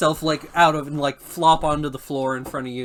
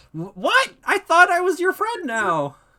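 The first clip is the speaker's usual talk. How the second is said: very high, swooping put-on goblin voice; 3 dB louder than usual. Voicing the goblin's reply to the players, in a goblin voice. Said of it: "he says".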